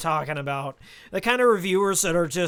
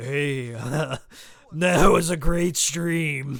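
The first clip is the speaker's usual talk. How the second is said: voice sunk deeper, slow and low; 3 semitones lower than usual. Showing how the voice sounds late in the stream: deeper voice. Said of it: "the longer I talk, the deeper my voice gets".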